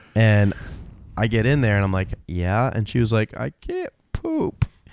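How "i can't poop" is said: mock tearful, very high-pitched soft crying voice. Speaker retells what a woman on the toilet said to them: imitating a woman crying. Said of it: "She's like crying to me".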